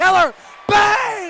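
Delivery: very loud, overexcited sports commentator yell. Calling a made basket during a basketball game: excited energetic shouting. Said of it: "I'm getting way too energetic".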